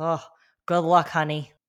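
put-on Massachusetts accent. Retelling what a passing woman said while bracing onto him, imitating a Massachusetts accent. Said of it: "in true Massachusetts fashion with her accent".

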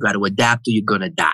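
put-on broad, thick, laid-on New York accent. Retelling what a man said in a conversation about strategy, in a thick new york accent. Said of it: "He had this thick New York accent".

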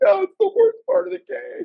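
put-on very high, tearful child's sob.

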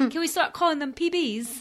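not-so-good put-on British accent. After being asked to try it in a british accent, a weak british accent. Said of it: "that was definitely not my best British accent".

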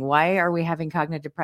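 normal talking voice

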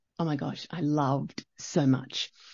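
plain

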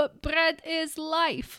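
slow, high, put-on Ukrainian accent. Quoting what their mom says, in her accent: imitating mom's Ukrainian accent. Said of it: "with that accent too We're Ukrainian".

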